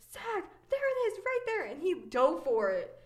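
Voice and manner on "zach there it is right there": put-on shrill, very high, fast, frantic scream. Recalling seeing it on the shore and calling to a brother, retelling a scream. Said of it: "I screamed at my brother".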